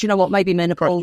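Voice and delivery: ordinary talk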